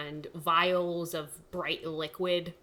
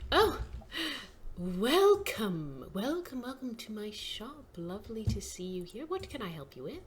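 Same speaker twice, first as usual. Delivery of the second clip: put-on sing-song, high, elderly female elf voice; 5 semitones higher than usual. Game master voicing an elven woman welcoming customers to her shop, older elven woman voice. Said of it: "a older elven woman steps out".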